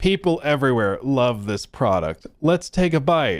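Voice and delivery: stiff robotic voice, like a robot sounding human. Retelling a CEO's awkward sandwich ad: robotic voice imitating McDonald's CEO. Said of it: "like a robot trying to convince you it's human".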